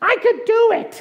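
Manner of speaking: put-on very high, triumphant baby pig puppet voice.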